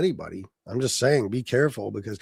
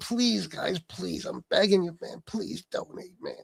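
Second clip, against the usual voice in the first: fake pleading tone, whispered and breathy; 5 semitones higher, 8 dB quieter than usual. Acting out begging viewers to donate, as a joke: mock begging. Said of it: "I'm not begging nobody for nothing".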